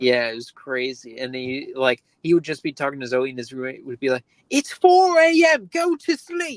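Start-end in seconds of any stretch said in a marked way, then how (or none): 4.5-6.6 very high-pitched, loud, slow, drawn-out complaining voice. Retelling the roommate's complaint at night: Nigel Uno voice. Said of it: "his roommate had the voice of, of Nigel Uno".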